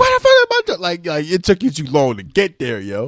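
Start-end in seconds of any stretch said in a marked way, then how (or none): 0.0-0.8 loud, high-pitched screaming. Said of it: "She was screaming at one point".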